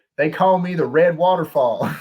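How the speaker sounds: heavy Southern drawl, laid on thick, loud and high. Retelling a kid's answer when asked his name, imitating a thick southern drawl. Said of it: "like a thick Southern drawl".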